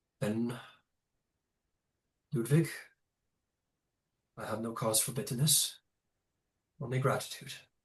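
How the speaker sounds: quiet, soft, dignified, princely regal voice. Narrator voices a prince who straightens and speaks to ludwig, soft and dignified. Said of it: "he says to you softly and with as much dignity as he can muster".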